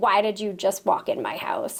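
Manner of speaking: angry, confronting, demanding tone. Recounting a big man who came out angry at the driveway: retelling an angry man. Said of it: "he was very angry".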